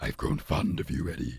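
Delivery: very low, deep character voice. Describing a film character, then quoting its line: Venom voice impression. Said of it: "I can do that impression".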